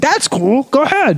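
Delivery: very high-pitched, froggy voice. Imagining the Super Bowl winner's reply, does a Patrick Mahomes impression. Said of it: "his Kermit the Frog voice would be like".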